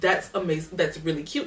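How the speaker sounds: plain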